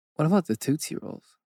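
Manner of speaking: put-on Swedish accent. Chatting about popular candies, asking a question in a Swedish accent. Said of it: "You said it with like a Swedish accent".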